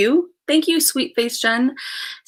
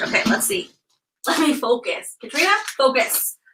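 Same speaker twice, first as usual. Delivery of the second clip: words broken up by giggles and laughter; 3 semitones higher than usual. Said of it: "I'm laughing".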